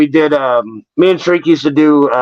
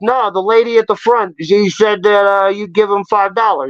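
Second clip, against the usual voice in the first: put-on heavy, laid-on New York accent, pitched up; 5 semitones higher than usual. Acting out a janitor character from escape rooms: Ralph, heavy New York accent. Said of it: "he's got a real heavy New York accent".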